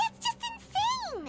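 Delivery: high, slow, horrified cry.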